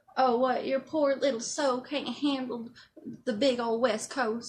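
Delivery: put-on thick Southern accent. Retelling a guy's comment after the speaker moved west, imitating a pitiful southern accent. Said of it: "the expression of like the Southern pitiful".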